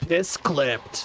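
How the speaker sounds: acted video game character voice. Speaker tries out a line in a Halo voice. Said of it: "Halo voice".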